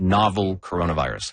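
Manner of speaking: stress on "novel", falling end. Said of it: "I'm gonna emphasize that word".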